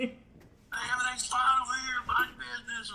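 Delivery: put-on very high, wild, crazy old man hollering. Retelling yelling across the road at the neighbor: retelling yelling like a crazy old guy. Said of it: "I'm yelling like old crazy guy".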